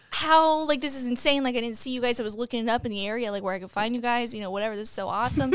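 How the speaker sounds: normal talking voice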